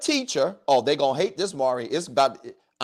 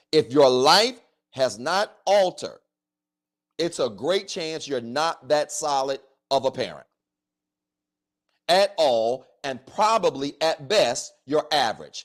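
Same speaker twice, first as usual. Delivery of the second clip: slow, measured, deliberate, word-by-word delivery. Talking to Doc about parents whose lives never change: speaking slowly. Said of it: "I want to say this slow".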